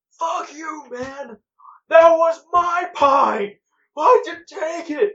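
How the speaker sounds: very loud, shrill, high, slow, drawn-out screaming. Telling a story, the speaker imitates a guy yelling at a passed-out man: imitating a man yelling. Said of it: "this guy's like yelling at him".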